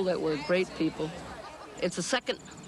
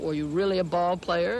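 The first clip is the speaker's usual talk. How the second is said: ordinary delivery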